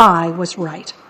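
ordinary delivery

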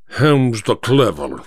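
ordinary talk

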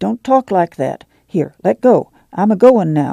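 usual speaking voice

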